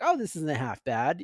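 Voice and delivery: ordinary talk, nothing marked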